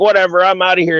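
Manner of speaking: angry, fed-up, dismissive brush-off tone. Quoting a man who got mad at the event and stormed off, imitating an angry man. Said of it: "he gets mad and he's like".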